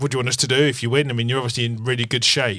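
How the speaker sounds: put-on stern accent of northern England. Retelling what Westwood said, in Westwood's stern northern accent. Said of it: "in his kind of stern northern accent said".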